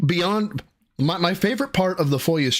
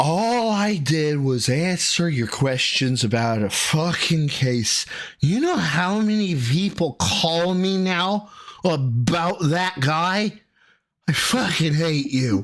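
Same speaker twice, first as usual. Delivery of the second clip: put-on slurred voice. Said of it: "this slurred voice of".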